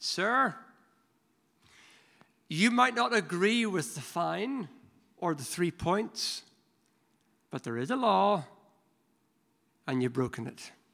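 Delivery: mock calm, kind, gentle yet firm voice. Retelling what a calm policeman finally said to him, in a gentle but firm voice. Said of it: "he said with a gentle but firm voice".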